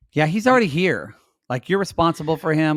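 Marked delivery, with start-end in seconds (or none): none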